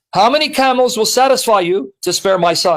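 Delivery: ordinary delivery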